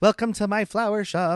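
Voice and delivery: high-pitched robotic voice.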